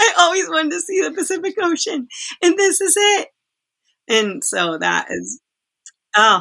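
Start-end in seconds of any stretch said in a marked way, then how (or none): 0.0-3.3 put-on very high, gushing, overjoyed, thrilled child voice. Retelling what a kid said on seeing the Pacific Ocean, imitating an excited kid. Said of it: "he's so excited".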